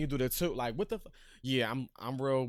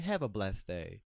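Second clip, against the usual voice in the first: sugary, fake sweet, put-on politeness; 5 semitones lower than usual. Showing the parting line at work: put-on smiling politeness. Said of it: "with a smile, say".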